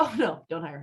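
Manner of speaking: ordinary talk, nothing marked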